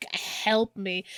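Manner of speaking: put-on begging voice. Retelling a movie scene where a wounded character crawls to friends: imitating someone begging.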